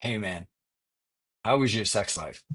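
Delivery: conspiratorial, secretive, confidential just-between-us tone. Retelling a friend leaning in at lunch to ask: imitating a friend leaning in secretively. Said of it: "looks around an empty restaurant and leans in like this".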